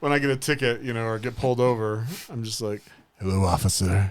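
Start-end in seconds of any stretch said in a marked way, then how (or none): 3.2-4.1 mock-seductive voice, much lower pitch. Describing getting pulled over, greeting the officer in a mock-seductive voice. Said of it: "that's my seductive voice".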